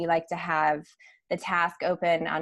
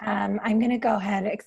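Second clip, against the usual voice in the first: hoarse, croaky frog voice; 4 semitones higher than usual. Just home from traveling early this morning, about to start the groups, frog voice. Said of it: "Excuse my frog voice".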